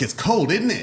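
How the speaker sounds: fake English accent, pitched very high. Retelling talking while drunk on a trip: put-on English accent. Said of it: "somewhere where it's an English accent".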